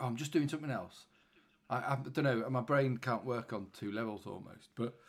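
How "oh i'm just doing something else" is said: ordinary talk, nothing marked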